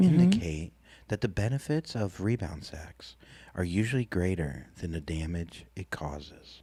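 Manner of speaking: soft-spoken, hushed reading, as softly as possible. After being asked to speak as softly as possible, soft-spoken. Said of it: "Try to do it as softly as you can".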